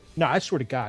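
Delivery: low, emotionless, deadpan, awkward intense insistence. Describing a guy's serious look, imitating his socially awkward intensity. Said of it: "socially awkwardly intense".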